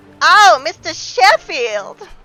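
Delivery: shrill, very high, very loud belted-out cry. Doing an impression after saying she will do it as Fran Drescher. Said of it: "let me do it as Fran Drescher".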